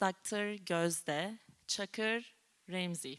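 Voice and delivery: very slow, deliberate, each syllable carefully spaced out. Introducing oneself to an audience, says own name very slowly. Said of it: "I said it really slowly".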